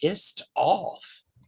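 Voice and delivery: voice dropped low, confiding. She lowers her voice as if she wouldn't say this in front of the kids. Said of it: "she lowers her voice".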